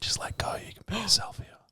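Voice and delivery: imitated whispering. Retelling what a girl at a party whispered: imitating someone whispering. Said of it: "she starts whispering to me".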